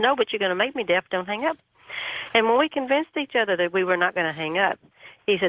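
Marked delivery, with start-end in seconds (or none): none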